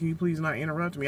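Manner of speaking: normal talking voice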